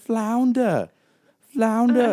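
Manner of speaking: put-on very high, very loud, shrill New Jersey accent. Retelling how a friend made fun of her drawing, imitating Ethan's Jersey voice. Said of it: "like taking this like Jersey voice with it".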